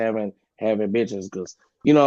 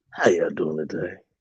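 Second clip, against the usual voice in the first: low, forced, put-on seductive sexy voice; 6 semitones lower than usual. Before asking the group a question, greeting them in a put-on sexy voice. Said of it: "let me put on my sexy voice".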